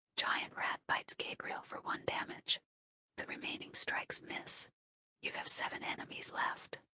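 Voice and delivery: soft whispering. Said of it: "when you whisper, I will whisper back".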